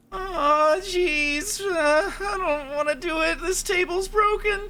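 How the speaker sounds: nervous stammering voice, very high and very slow. Asked to do a voice, the speaker starts off with a Morty voice. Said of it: "I want to hear you do Morty from Rick and Morty".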